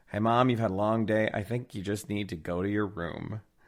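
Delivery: ordinary delivery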